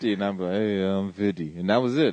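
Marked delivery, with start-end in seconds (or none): 0.5-1.6 easy, relaxed talk with the mouth grinding slightly. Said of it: "talking with my, with my mouth grinding a little bit".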